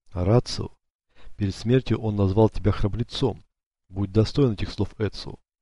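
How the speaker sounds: ordinary delivery, nothing marked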